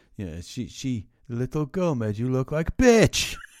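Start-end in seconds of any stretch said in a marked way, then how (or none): 1.3-3.4 put-on Polish accent, much higher, louder. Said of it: "Why is he Polish?".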